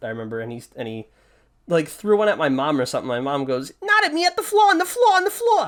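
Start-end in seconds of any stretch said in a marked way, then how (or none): 3.8-5.7 put-on heavy New York accent, very high and shrill. Imitate your mom telling your dad where to throw a firecracker, in mom's pretty thick New York accent. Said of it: "my mom had like a pretty thick New York accent".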